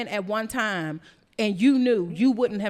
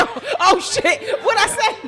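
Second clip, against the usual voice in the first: mock frightened, spooked blurt, high and slow; 10 semitones higher, 6 dB louder than usual. Imitating the other speaker looking scared after his remark: imitating someone scared. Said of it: "he's scared".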